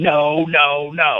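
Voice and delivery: high, screaming, hollering coach voice. Retelling how his tag team partner screamed at him during a match, retelling a coach-like scream. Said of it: "screaming at me like a coach going".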